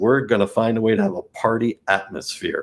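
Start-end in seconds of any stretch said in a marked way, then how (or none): none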